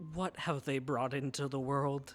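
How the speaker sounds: muttering under breath. Narrating a character who speaks quietly to himself. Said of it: "quietly says to himself".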